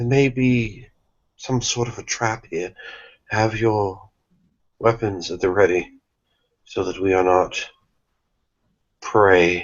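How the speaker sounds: soft hushed whisper. A player speaking in character to companions in a role-playing game, whispering. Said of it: "I'll whisper".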